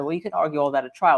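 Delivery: ordinary delivery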